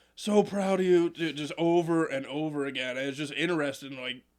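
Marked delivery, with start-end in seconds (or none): 0.2-1.1 put-on drunk man voice, higher and louder. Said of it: "He's hammered as he's doing this".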